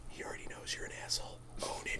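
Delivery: very quiet, hushed, devilish whispered voice. Acting out the devil on the speaker's shoulder, in a whispering devil voice. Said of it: "the devil just whispers in my ear".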